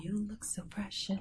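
soft, unvoiced whispered aside.

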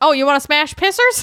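put-on casual, relaxed Southern accent, man's voice. Retelling a TikTok of two Southern people, the man's reply, in a Southern accent. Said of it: "it was definitely like two Southern people".

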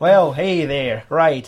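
badly done phony Texan cowboy accent. Mocking an actor's accent in the movie Cellular, a bad fake American cowboy accent. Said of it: "That's not American at all".

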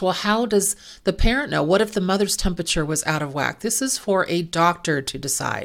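ordinary delivery

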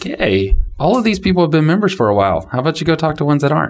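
play-acted, pointed, tongue-in-cheek sarcastic sing-song. Retelling what they tell people who talk only to longtime members, mock-sarcastic remark. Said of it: "It's more like a sarcastic comment like".

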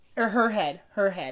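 plain

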